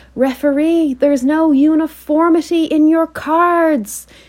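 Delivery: very high plummy shriek, "cards" stretched out. At a football match, the speaker imitates their mom screaming at the referee: imitating mom's posh scream. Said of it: "my mom just screams out ... in her absolute poshest voice".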